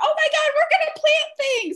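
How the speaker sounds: mock very high, shrieking children's screaming. Retelling how little siblings ran outside to the bins: imitating kids screaming.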